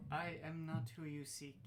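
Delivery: gentle, mechanical, machine-like robotic voice. In a role-play game, an unseen speaker answers the players in a soft mechanical voice. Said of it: "a soft mechanical voice".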